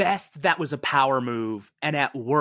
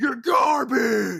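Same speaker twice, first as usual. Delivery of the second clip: exaggerated deep gravelly voice, pitched a bit higher; 10 semitones higher than usual.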